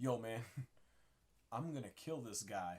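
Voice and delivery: very quiet, conspiratorial half-whisper. Voicing a character who half-whispers a threat to a companion: half-whispering. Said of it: "whispering in his ear".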